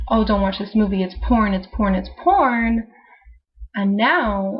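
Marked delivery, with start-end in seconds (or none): none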